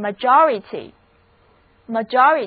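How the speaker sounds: slow majority, stress on second syllable. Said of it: "单词重音第二个音节".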